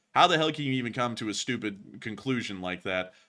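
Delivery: plain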